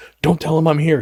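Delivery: imitated whisper. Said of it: "whispering at him".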